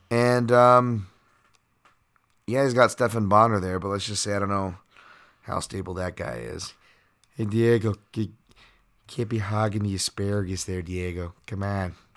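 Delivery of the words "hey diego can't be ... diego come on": terrible put-on Chicago accent. Speaker voicing Bonner calling out to Diego, terrible Chicago Stephan Bonner accent. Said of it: "Terrible Chicago Bonner accent there".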